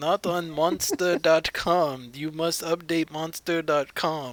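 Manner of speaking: put-on polite Indian accent. Retelling a job call from a caller: imitating the caller's indian accent. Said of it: "a polite little Indian man".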